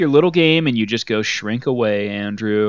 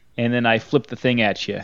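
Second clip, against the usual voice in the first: ordinary delivery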